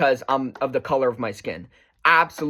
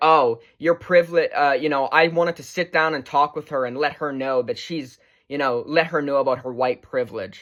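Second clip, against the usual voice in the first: ordinary talk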